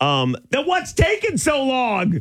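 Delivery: put-on high-pitched voice of a ten-year-old child. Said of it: "So I'm raising my hand".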